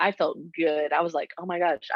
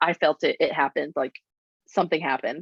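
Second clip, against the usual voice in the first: ordinary talk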